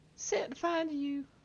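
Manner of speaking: high-pitched squirrel voice. A storyteller voices a squirrel replying to a character, in a high-pitched squirrel voice. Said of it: "Squirrels just have high pitched voices".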